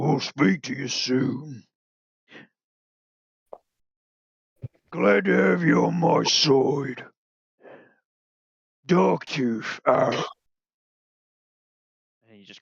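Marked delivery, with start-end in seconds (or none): 0.0-10.1 slow, drawn-out orc boss voice. Redoing the orc commander's sign-off in his proper voice: Darktooth's orc voice. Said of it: "that's not his voice".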